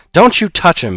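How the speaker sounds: very high, loud, forced through gritted teeth. Narrator reading a character's reply to a companion, through clenched teeth. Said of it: "he said through his clenched teeth".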